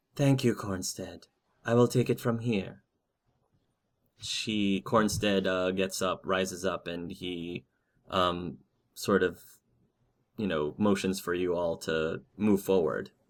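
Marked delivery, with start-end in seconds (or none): 0.2-2.8 calm, quick, very soothing voice. Game master voicing a woman speaking to the party, very soothing voice. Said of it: "in a very soothing voice".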